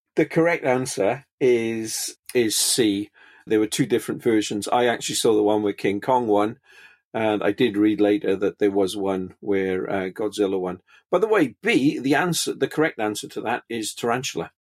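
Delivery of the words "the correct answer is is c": slow, drawn-out, cocky tone. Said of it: "I had to be cocky".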